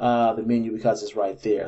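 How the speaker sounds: ordinary delivery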